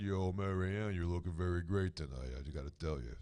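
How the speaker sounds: very low, deep character voice, dropped way down. Greeting the guest with a Rocky Balboa impression. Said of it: "as Rocky Balboa said".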